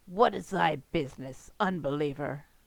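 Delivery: deep, low, growled voice. A game narrator voicing a cloaked figure at a temple entrance, growling. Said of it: "he growls".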